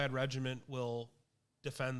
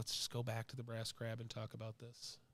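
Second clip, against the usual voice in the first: quiet mutter under the breath, quieter; 2 semitones lower, 9 dB quieter than usual. Voicing a character who urges the group to leave: said under her breath. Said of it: "kind of says under her breath".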